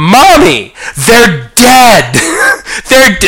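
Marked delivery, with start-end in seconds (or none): 0.0-2.1 put-on high-pitched, loud, screaming child's voice. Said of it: "they're screaming".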